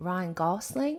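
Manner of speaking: put-on gentle, unhurried Australian accent. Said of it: "You do it".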